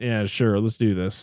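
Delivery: put-on half-asleep voice. Recapping a movie, imitating its psychiatrist character: half-asleep Silberman impression. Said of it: "he's like half asleep".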